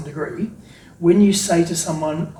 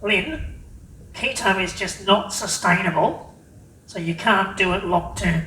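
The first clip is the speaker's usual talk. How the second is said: slow, doubting, skeptical naysayer voice; 2 semitones higher than usual. Voicing a typical critic's objection to the speaker, in a put-on naysayer voice. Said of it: "my best naysayer voice".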